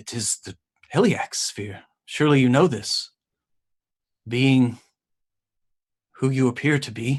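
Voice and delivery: slightly confused, puzzled tone. Narrator voicing a character answering the player, a bit confused. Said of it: "like confused a bit".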